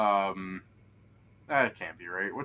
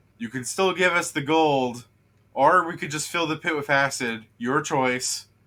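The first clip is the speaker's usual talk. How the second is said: loud, high, taunting scream. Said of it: "he screams down".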